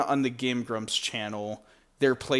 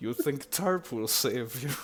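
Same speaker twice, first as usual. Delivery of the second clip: put-on Russian accent, fully in character; 3 dB quieter than usual. Describing a game character as voiced by the Game Grumps: Game Grumps' deep Russian accent. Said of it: "he's got this like deep Russian accent".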